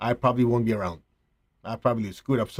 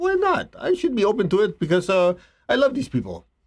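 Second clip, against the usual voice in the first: high-pitched, mock protesting tone. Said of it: "You go".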